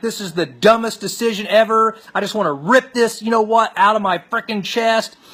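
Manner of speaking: put-on furious voice. Retelling an outburst after a painful procedure: imitating own angry yelling. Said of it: "And I'm pissed".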